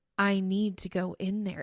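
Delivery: calm, steady, authoritative, in-charge certainty. Retelling what a friend said in the car: imitating a calm, authoritative voice. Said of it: "the most calm, just, like, authoritative".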